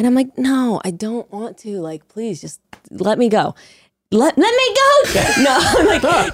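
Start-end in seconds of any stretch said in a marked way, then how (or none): 0.4-5.4 drained, weary, exhausted tone. Retelling begging a producer to stop while jet lagged: imitating an exhausted plea. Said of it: "jet lagged, so exhausted".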